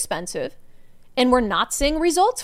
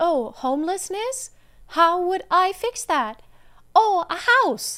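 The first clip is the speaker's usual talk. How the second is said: put-on high, simple voice of a five-year-old child; 6 semitones higher than usual. Showing a simplistic view of homelessness as a five-year-old would, five-year-old child voice. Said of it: "That was my five-year-old impression".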